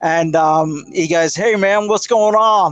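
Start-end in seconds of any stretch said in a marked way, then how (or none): 1.3-2.7 put-on American accent. Retelling a man's reply when he shouted to him from the car, American voice. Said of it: "Like an American voice".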